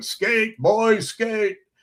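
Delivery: booming, bellowing shout, very high in pitch. Retelling how a hockey dad yelled from the stands: imitating a dad bellowing. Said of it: "because he would always yell".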